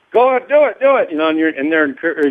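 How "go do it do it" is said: very high, yelled, encouraging push. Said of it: "they're yelling".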